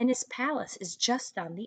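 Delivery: ordinary delivery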